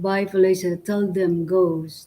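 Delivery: ordinary delivery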